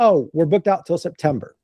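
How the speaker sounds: acted, self-assured, confident, matter-of-fact, unapologetic tone. Retelling answering a woman who asked how far out they were booked, with a confident reply. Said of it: "I said it very confidently".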